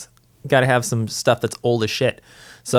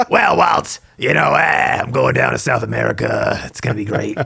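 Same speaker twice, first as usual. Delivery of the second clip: rough, creaky, raspy cartoon duck voice. Answer Walt Disney's question about what to do today, as Donald Duck smoking nineteen packs of cigarettes. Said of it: "Donald smoking nineteen packs of cigarettes".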